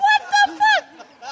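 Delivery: high-pitched voice. Retelling own reaction in a bathroom: high-pitched voice. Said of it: "How does your voice get that high?".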